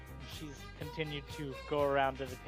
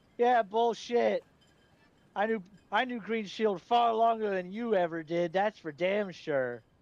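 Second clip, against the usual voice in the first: put-on tipsy, cocky young man voice; 6 semitones higher, 7 dB louder than usual. Voicing a drunk youth who challenges a player's story: cocky drunk youth. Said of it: "He's obviously a little bit drunk".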